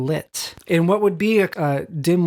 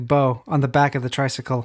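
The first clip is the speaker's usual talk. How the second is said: ordinary talk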